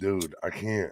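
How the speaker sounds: plain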